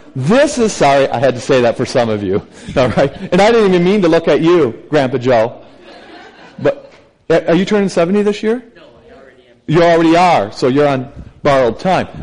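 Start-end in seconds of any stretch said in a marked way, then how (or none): 9.7-12.3 playful, teasing, joking ribbing. A speaker ribs Mary about her age, teasing. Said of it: "I'm teasing you".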